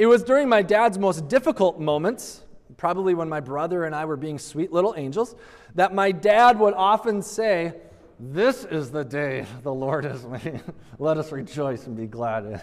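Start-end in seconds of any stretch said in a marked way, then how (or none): 8.2-12.6 put-on speech through gritted teeth. Quoting what their father would often say in difficult moments, through gritted teeth. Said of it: "through the gritted teeth of my father".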